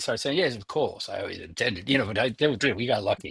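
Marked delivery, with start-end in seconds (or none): 0.4-1.9 put-on British accent. Joking about planning the music, in a put-on British accent. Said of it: "I like to get the British accent going".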